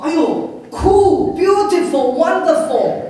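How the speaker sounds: high, loud, drawn-out gushing praise.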